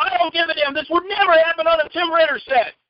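put-on high yell. Retelling yelling at a man after knocking his hand away, retelling a yell. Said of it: "I keep yelling".

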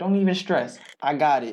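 normal talking voice

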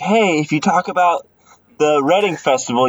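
usual speaking voice

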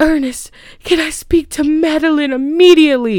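very high, put-on upset, distressed, pleading voice. Retelling a film scene of practicing at a vanity: imitating Helen's fake distressed voice. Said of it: "she's practicing her distressed voice".

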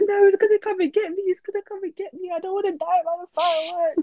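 tearful, frightened high crying wail. Retelling how they cried, scared of the Legoland fireworks as a child, imitating themself crying. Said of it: "and I was crying like".

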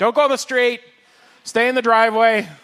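high, loud hollering yell. Describing kids today, acting out a mom on the steps: imitating a mom yelling. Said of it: "the mom's out there on the steps yelling".

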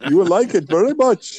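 put-on Indian English accent, pitched high. Chatting about wildebeest, slipping into it: indian accent. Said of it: "I don't know why I'm doing an Indian accent here".

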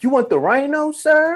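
put-on loud yelling voice. Retelling a store clerk loudly asking about a purchase: imitating a clerk yelling. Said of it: "Fuck you yelling it for".

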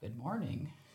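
nice, soft, buttery murmur, melting and smooth. Retelling a greeting on a film set: buttery soft George Clooney voice. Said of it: "soft George Clooney voice".

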